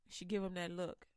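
plain

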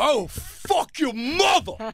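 crude screaming. Retelling yelling at a heckler by the stage railing: imitating own angry yelling.

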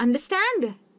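understand with weight on last syllable stand. Teaching English verb stress with an example: stress on STAND in understand. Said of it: "ये जो stand है ... उसके तरफ मेरा stress पड़ेगा".

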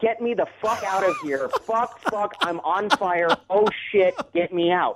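put-on panicked screaming and yelping. Retelling how a man stuck in a smoking costume screamed: imitating a man screaming.

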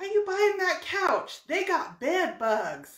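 put-on heavy American southern accent. Quoting a neighbor while loading a couch into the car: southern accent. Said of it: "It was like a southern accent".

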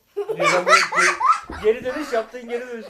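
high, laughing, amused disbelief.

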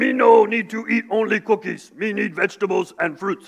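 hungry-sounding puppet monster voice. Describing a campaign where Cookie Monster learns about vegetables, Cookie Monster voice. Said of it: "They have Cookie Monster saying".

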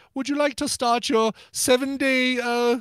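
high-pitched, slowed-down British accent.

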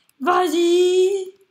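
loud, high-pitched cheering shout.

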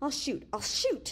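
frantic, crazily rising, high voice. Evans, backed against the wall, answers Lucky: voice rising crazily. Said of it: "His voice rose crazily".

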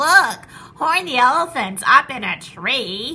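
loud, slow, jeering gleeful shout, "tree" stretched out. Friends gather round an elephant sitting in a tree, shouting with glee. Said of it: "they shouted with glee".

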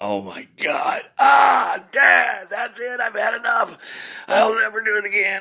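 loud, high, shrill, drawn-out fake wailing and sobbing. Retelling how he pretended a spanking hurt: imitating his own fake crying. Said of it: "carry on like you just killed me".

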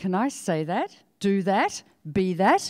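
plain

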